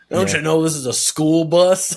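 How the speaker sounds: loud, slow, mock sarcastic tone. Retelling a movie scene, quoting the bus driver to a child: imitating a sarcastic bus driver. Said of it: "she gets, like, sarcastic with the kid".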